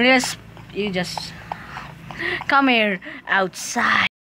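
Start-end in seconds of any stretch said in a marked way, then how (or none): 2.5-4.1 sinister coaxing man voice. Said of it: "You sound like a creepy man trying to attract kids in a van with candy".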